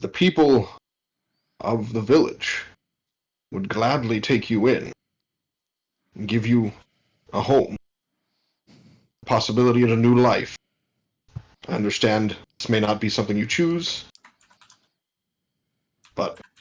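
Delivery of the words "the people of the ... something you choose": private, close-in, intimate tone. Kneeling beside another character and speaking to him; speaking quietly. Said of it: "I'm going to quietly speak to him".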